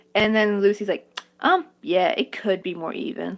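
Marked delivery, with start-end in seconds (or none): 1.4-3.3 harsh, condescending, talking-down tone. Retelling what another commenter replied online: mocking a harsh, condescending tone. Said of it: "said it in a really harsh, condescending tone".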